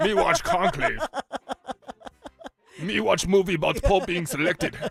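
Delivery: high, loud puppet-monster voice, caveman-style talk. Joking about watching a movie, Cookie Monster voice. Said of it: "That's also a good Cookie Monster".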